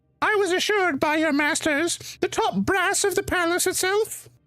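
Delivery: very high, piercing, shrill cry. Voicing a woman addressing a human in a chamber, in a shrill voice. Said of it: "her shrill voice echoes out through the chamber".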